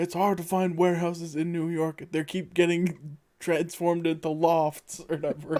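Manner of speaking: put-on furious outburst. Describing a scene, acting out one guy blowing up at another: retelling an angry outburst. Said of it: "blows up on him".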